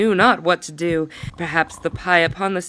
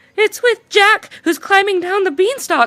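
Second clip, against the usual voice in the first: very high, squeaky little mouse voice; 14 semitones higher, 5 dB louder than usual. The mice answer the roaring giant about Jack on the beanstalk, in a squeaking mouse voice. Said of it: "squeaked the mice".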